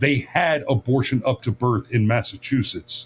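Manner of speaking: ordinary delivery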